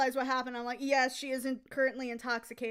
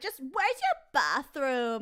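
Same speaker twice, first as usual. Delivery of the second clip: put-on classic sing-song valley girl cadence. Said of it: "so we got, like, a Valley Girl leper?".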